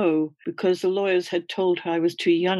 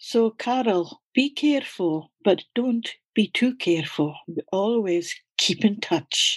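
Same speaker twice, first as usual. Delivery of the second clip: put-on refined, educated, cultured Scottish accent; 3 semitones higher than usual. Retelling what he said to her before she sailed to new york, cultured scottish accent. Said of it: "in his cultured Scottish accent".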